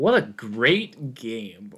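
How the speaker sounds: very slow, heavily sarcastic, very drawn-out drawl. Answering a question about the upcoming Egg Bowl game: sarcastic. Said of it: "that was sarcastic".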